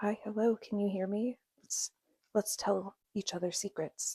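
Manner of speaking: very quiet, soft, hushed whisper. Testing how a new mic sounds, speaking to viewers: whispering. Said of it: "Let me whisper just to see what that sounds like".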